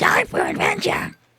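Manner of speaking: unconvincing cartoon voice. Repeating the line Toad says, in a bad Toad voice. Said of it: "that's my bad Toad voice".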